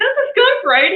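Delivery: very high-pitched yelling. Retelling calling out a question to the guy across the street: imitating a yell. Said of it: "So I yelled at the guy across the street".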